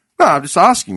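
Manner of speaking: normal talking voice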